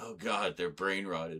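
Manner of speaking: mock-despondent groan of acted dismay. Retelling how a man reacted to girls saying six seven, imitating a despondent groan. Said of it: "He was so despondent".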